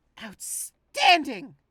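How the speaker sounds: top-of-the-lungs yell, very high, shrill and loud. In a game, reacting to getting the first hit, louder than intended. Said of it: "that was louder than I meant it to be".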